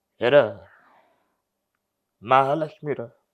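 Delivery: put-on weeping, grieving delivery. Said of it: "ఏడుస్తూ, feel అవుతూ మాట్లాడుతుంటారు".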